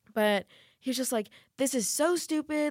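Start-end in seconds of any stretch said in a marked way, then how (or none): 1.6-2.7 high, drawn-out, irate griping voice. Retelling what a man in the restaurant yelled at her, imitating a man yelling. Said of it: "he was yelling and yelling".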